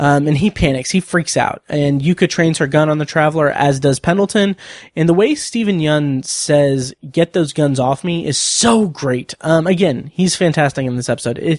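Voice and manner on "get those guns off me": ordinary delivery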